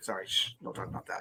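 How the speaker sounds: hushed, secretive whisper.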